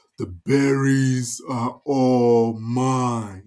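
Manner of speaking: dragon voice with "all" drawn out. Telling a story to children, speaking as a dragon who guards the berries; dragon voice. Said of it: "I like my dragon voice".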